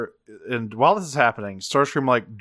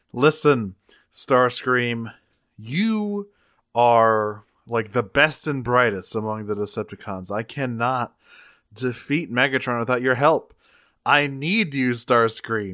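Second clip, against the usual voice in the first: plain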